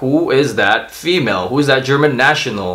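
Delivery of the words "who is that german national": normal talking voice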